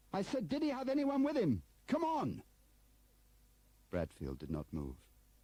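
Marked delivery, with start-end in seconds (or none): 0.1-2.4 shrill, high-pitched shout. A man pulls open the door and repeats his question to another man, shouting. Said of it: "He pulled open the door and shouted".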